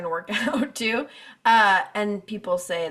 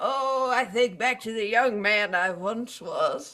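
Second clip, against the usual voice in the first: put-on old man voice. Looking back on years gone by, in a put-on old man voice. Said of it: "I love that you all of a sudden have an old man voice".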